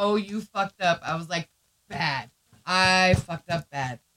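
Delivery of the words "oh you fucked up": put-on laughing while speaking. Retelling what a man said while laughing at the speaker, imitating someone laughing. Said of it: "he gets out literally laughing at me".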